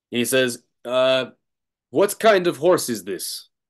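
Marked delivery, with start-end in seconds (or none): 1.9-3.4 heavily laid-on put-on Polish accent. Retelling what a man asked about a horse, in a polish accent. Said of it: "Polish accent".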